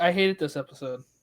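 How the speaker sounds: usual speaking voice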